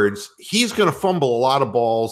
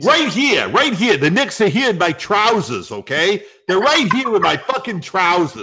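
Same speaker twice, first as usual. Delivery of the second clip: put-on, laid-on New York accent, pitched up; 7 semitones higher than usual. Speaker doing his New York guy talking about the Knicks, New York accent. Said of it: "I'm going to do my New York guy".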